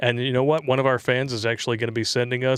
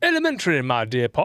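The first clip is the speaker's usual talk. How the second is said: put-on old British professor Oxford accent. Answering a viewer's donation request, old Oxford British professor accent. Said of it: "say an old Oxford pr- British professor accent".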